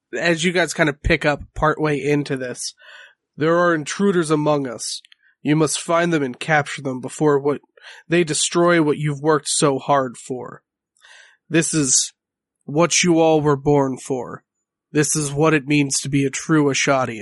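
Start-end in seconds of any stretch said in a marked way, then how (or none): 3.3-17.2 deep, booming, resonant speaking voice. Voicing a speaker who rallies a crowd below: deep booming voice. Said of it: "a deep timbrous voice kind of pitch in".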